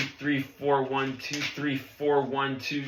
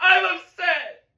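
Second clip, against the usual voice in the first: very high, loud, high-pitched yell; 5 dB louder than usual. Ordered to say it louder, the drummer answers: loud shout. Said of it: "say it louder".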